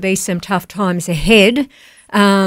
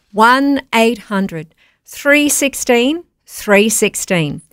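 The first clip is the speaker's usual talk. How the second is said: deliberately slow delivery; 2 semitones higher than usual. Giving listeners the donation phone number, said slowly. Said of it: "I'm going to say it slow".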